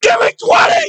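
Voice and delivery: mock shrill, very high-pitched screaming. Retelling screaming at laughing kids over the phone, screaming. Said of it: "I'm just screaming in my".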